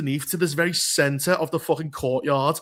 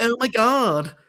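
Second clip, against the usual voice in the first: higher, badly done American Gen Z talking style; 6 semitones higher than usual. Mocking how a character now talks: Kimiko's Gen Z talking style. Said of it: "fucking Gen Z type of talking style".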